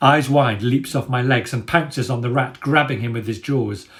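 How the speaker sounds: plain reading voice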